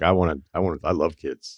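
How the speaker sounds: normal talking voice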